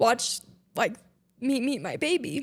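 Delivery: choking up, tearful voice. Describing family watching the first meeting with the newborn: tearful. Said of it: "I knew as soon as we would get to this section that I was just gonna cry".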